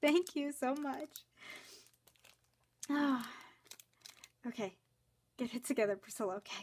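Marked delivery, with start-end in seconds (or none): 0.0-1.1 choked up, tearful, crying voice. Thanking someone, actually crying. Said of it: "I'm actually crying".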